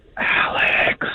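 whispering. Answering a radio caller's request for a whispered shout-out: whispering. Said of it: "and you whisper it".

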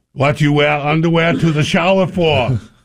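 put-on German accent. Telling a story, quoting what someone said in the showers, in Gunner's German accent. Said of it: "says in his German accent".

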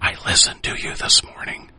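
soft, hushed, close-in confiding whisper. Retelling what an old acquaintance said after a hug: imitating a whisper. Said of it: "she kinda whispers".

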